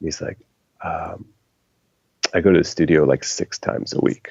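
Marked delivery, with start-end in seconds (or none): 2.3-4.3 quiet, hushed, confiding and secretive murmur. Retelling how a man leaned in and spoke about yoga: imitating someone speaking quietly. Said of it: "leans in real quiet and looks around".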